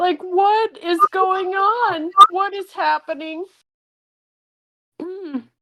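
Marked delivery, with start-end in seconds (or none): 0.2-3.5 crying voice, words breaking up through tears. Voicing a character walking away after walking in on a hug: crying while speaking. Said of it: "Zena just walks away crying".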